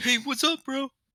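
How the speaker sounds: very high-pitched background-extra voice. Voicing the people in the background: background NPC voice. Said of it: "they're like".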